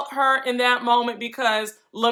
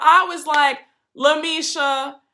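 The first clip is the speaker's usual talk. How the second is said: plain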